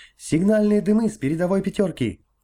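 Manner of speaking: agitated, excited, very high-pitched shout. Narrator voicing a ship's signalman calling out from the bow, excited shout. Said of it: "взволнованно закричал".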